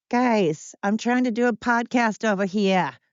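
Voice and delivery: high-pitched, crappy put-on East Coast accent. Doing a podcast with your dogs playing in the background, put on a crappy East Coast accent. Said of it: "with my crappy accent here".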